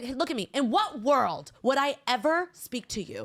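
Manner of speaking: angry, empowered telling-off with no holding back. Retelling going off on an old man on a train: retelling telling someone off. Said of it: "going off on this guy".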